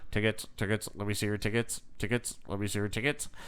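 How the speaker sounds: dull, flat, droning, repetitive monotone. Quoting a character from a movie: flat monotone. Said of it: "he's like so monotone and like he's like".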